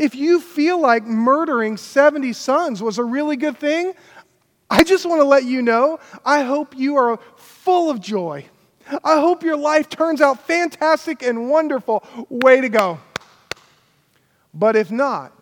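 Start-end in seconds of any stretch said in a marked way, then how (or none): 0.0-13.0 mock sarcasm dressed up as sincerity. Speaker retelling Jotham's speech to an audience, Jotham's words, mock-sincere sarcasm. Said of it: "Everyone catch the sarcasm".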